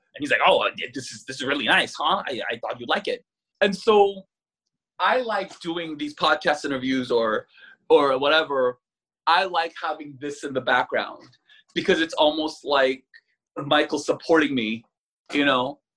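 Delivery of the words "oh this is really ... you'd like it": put-on older man voice, much lower. Retelling how he brought something home from the garbage: imitating Michael's older-man voice. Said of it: "He was older. He talks like that".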